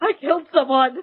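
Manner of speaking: acted, weeping, tearful sobbing voice. Describing a season-one scene of a show, imitating a sobbing confession. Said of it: "just sobbing".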